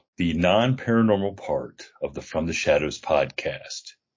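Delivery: smooth voiceover announcer read. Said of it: "I'm practicing my voiceover voice".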